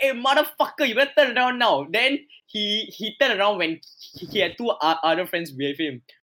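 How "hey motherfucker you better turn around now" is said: mock, high-pitched hollered shout. Retelling confronting a man at night: retelling own shouting. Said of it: "I started shouting at him".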